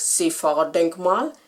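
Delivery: word said in a put-on Bavarian accent. Retelling how people in a queue said a monument's name: imitating a bavarian accent. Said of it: "they said it in this Bavarian accent".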